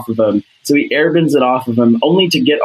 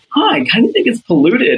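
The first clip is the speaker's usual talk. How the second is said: put-on very high, sing-song, innocent little-kid musing voice; 10 semitones higher than usual. Retelling what he said that made her laugh, imitating a childlike voice. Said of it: "he said it with such childlike".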